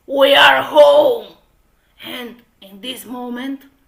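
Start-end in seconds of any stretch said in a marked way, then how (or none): 0.1-1.3 strong, very loud, booming, rough fatherly voice. Reading a story aloud, voicing the father arriving home: strong voice. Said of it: "The father with the strong voice".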